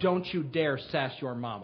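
put-on cold, hard, low, icy tone. Retelling a quiet, reserved father's words to his son at dinner, retelling an icy warning. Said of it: "said to him with ice in his voice".

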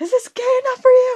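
shrill, very high scream at full volume. Acting out what she yelled in a story: retelling her yelling.

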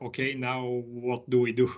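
ordinary delivery

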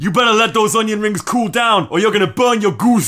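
loud, shrill, very high wrestler voice, belted out. Reading an Urban Dictionary example aloud, the speaker does a Taz impression. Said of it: "gotta read this in taz's voice".

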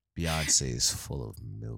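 creepy, eerie put-on voice. Joking about [name] being pregnant, in a creepy voice. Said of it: "My creep voice".

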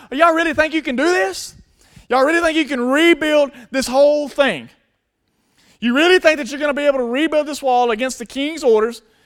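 acted, high, jeering, scornful, mocking taunting yell. Acting out a man taunting the wall builders from the side, imitating screaming taunts. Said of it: "he's screaming and he's taunting and he's making fun of".

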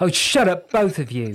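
curt, sharp, high snapping voice. Narrator reading a woman reacting to two others; snapping. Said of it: "Jessica snapped".

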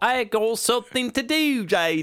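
put-on English accent, very high-pitched. Imitating James turning down an invitation to come play, imitating James's English accent. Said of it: "we just imitated an English".

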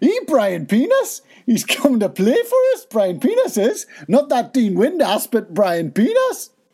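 very high, swooping put-on Geordie (Newcastle) accent. Telling how a footballer was signed by Newcastle United, in a Geordie accent. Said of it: "Let's do some Geordie accents".

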